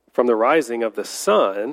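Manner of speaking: ordinary talk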